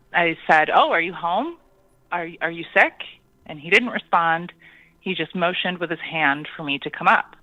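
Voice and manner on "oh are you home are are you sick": plain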